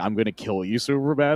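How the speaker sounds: full-throated villain yell, as loud as possible. Retelling a comic scene where he yells in old footage: imitating Lex Luthor yelling. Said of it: "armor yelling".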